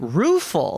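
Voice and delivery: taken-aback, surprised, rueful delivery. Retelling how the other speaker reacted to a word: imitating a taken-aback "rueful". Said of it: "taken aback, and you went".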